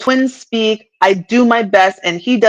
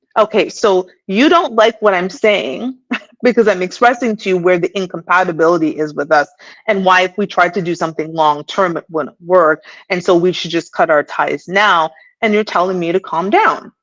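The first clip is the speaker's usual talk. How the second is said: ordinary talk, nothing marked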